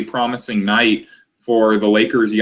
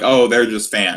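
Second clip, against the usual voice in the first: put-on dismissive tone. Imitating athletes talking about fans in interviews: imitating athletes' dismissive tone. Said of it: "dismissive tone".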